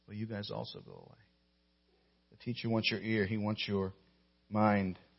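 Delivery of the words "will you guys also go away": very quiet, soft, hushed near-whisper. Imagining Jesus asking his disciples if they will leave: soft near-whisper as Jesus. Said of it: "I can imagine him saying it softly, maybe almost in a whisper".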